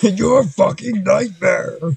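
loud, high-pitched yelling. Picturing a metal band front man's growl, yelling: Cookie Monster yelling. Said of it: "Cookie Monster yelling".

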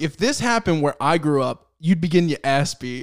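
usual speaking voice

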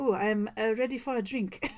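mock stilted, halting English. Retelling the director's Oscar speech remark: imitating stilted English. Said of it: "adorable in stilted English".

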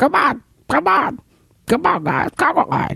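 high, bad, cackling voice. Retelling someone leading a cosplayer conga line through the con, terrible Joker voice. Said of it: "In his terrible Joker voice".

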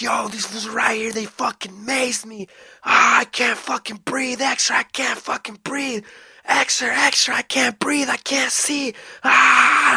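put-on high, pained screaming cries. Retelling a maced man screaming on the phone: retelling someone's screaming. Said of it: "this was fucking screaming".

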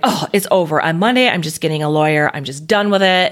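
ordinary delivery

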